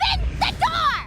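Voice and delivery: very high, shrill, loud shouting. Pleading at a closed door to be let in: yelling. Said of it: "Stop yelling".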